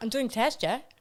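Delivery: speaking with Icelandic accent. Retelling a test recording done in an Icelandic accent: imitating an Icelandic accent. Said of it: "I did it in an Icelandic accent".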